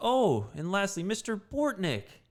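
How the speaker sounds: slow, drawn-out, pointed, swooping sing-song announcing tone. Retelling what the field coordinator said to the group: imitating the coordinator's tone. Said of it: "in that kind of tone".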